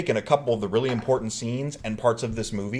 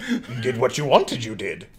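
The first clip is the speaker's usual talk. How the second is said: put-on tiny creature voice. Acting out a film scene after praising the Empire voice: Yoda voice. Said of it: "Empire Yoda is the best Yoda".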